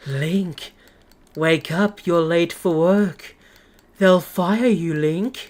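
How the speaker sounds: put-on very soft voice. Recalling an in-game voice calling to link, imitating a very soft voice. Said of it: "In like the softest voice they can".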